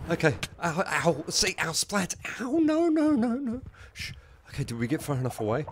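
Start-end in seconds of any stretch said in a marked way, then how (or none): 0.6-3.6 afraid and shaking, much higher and louder. A gamer running from something coming for them: scared and shaking. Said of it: "I'm so shaking".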